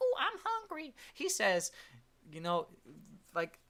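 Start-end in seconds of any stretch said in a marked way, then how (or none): 0.0-0.9 tiny, very high, cutesy pet voice. Speaker mocks people who talk as if they were their pet; cute little pet voice. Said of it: "speaking in a little cute pet voice".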